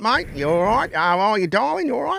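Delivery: put-on Australian accent, high-pitched. Retelling how the girls talked to you: put-on Australian accent. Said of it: "bit of an accent".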